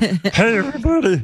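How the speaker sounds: strangled, choking, squeezed-out, very high-pitched voice. Imitating how one's own voice once sounded: Kermit choking voice. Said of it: "I sounded like Kermit choking on a cock".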